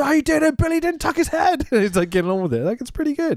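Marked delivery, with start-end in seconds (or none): 0.0-1.7 very high, panicked cry of sheer panic. Acting out how a man said a line in a panic situation, imitating a panicked voice. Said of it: "he just says it like you would say it in that panic situation".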